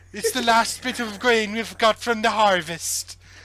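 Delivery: put-on high-pitched Welsh accent. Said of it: "Such a good Welsh accent".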